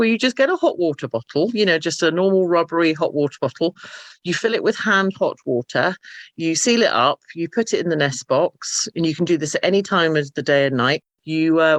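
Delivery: normal talking voice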